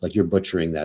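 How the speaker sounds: ordinary delivery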